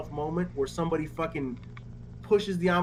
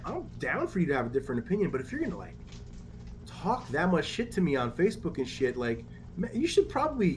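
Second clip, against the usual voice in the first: ordinary delivery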